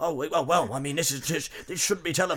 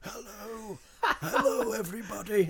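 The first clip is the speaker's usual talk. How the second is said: nature documentary narrator voice, pitched up; 5 semitones higher than usual. Showing a David Attenborough impression while joking about dressing as him: David Attenborough voice. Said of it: "my David Attenborough impression".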